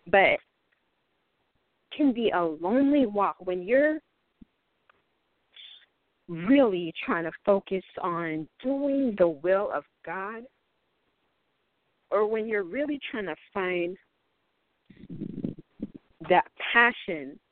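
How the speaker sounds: slightly choked-up, emotional voice. Describing how lonely trying to do God's will can be, getting a little emotional. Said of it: "I'm getting a little emotional".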